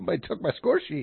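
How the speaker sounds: breathy, helpless, panicky, forlorn voice. Someone searching for their missing score sheet, sounding like a lost puppy. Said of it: "you sound like a lost puppy".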